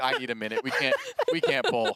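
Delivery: loud, swooping, pleading words broken by crying laughter. Retelling a teammate's reaction during a raid pull, imitating Maxer crying with laughter. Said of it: "then Maxer starts crying, laughing".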